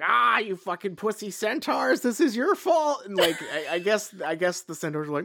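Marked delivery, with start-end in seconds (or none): 0.0-3.0 hollering at full cry, high and raised. Retelling a scene where Hagrid yells at the centaurs: imitating Hagrid yelling. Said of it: "he has to stop in the middle of the forest and yell".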